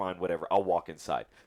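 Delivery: ordinary talk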